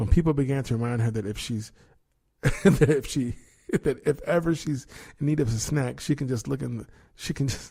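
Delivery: flustered, frazzled, giggly reading, tripping over words. Reading a news item aloud and stumbling over it: frazzled, laughing while reading. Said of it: "I'm just frazzled".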